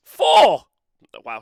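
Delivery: overly loud voice. Giving a score when called on by name, too loud. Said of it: "that was way too loud".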